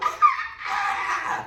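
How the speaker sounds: very high, piercing, crazed mock scream.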